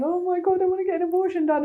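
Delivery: high, tearful voice, crying through the words. Retelling telling her mum about an unexpected pregnancy: retelling crying while speaking. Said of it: "going to my mum and crying and saying".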